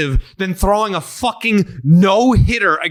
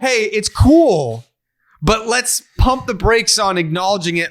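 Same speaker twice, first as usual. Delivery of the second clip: normal talking voice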